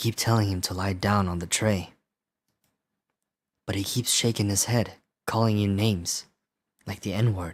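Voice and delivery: scary storytelling voice. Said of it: "I have to do a scary voice".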